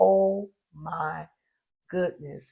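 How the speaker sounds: overwhelmed, amazed, overcome with wonder. Retelling seeing the ring in the light: retelling own overwhelmed reaction. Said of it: "And I was so overflowed".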